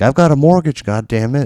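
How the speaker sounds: very loud, shrill, high pretend scream. Joking about screaming at the YouTube gods: pretend screaming. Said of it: "I'm not screaming at the YouTube gods being like".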